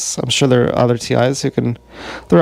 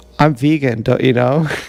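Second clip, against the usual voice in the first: usual speaking voice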